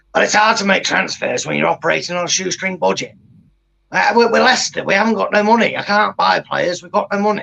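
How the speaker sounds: rough, gritty, creaky voice. Imitating a football manager answering a press conference question: Sean Dyche impression. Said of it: "that impression of him".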